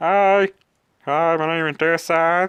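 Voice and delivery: put-on very high, slow, drawn-out toy-figure voice. Posing a figure in the 'hi teacher' pose, in the usual put-on voice. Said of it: "I always do that voice".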